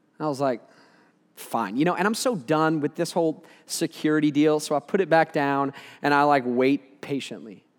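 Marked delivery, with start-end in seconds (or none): none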